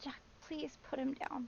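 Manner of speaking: hushed, breathy, pleading voice, genuinely upset, near tears. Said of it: "You sounded genuinely upset".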